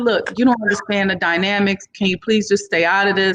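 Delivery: ordinary delivery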